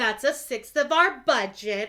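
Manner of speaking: condescending tone.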